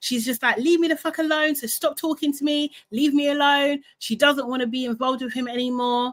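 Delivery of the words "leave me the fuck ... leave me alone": acted-out furious, angry ranting outburst. Retelling a reality show fight as she walks away: imitating an angry outburst. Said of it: "She's obviously crashing out again".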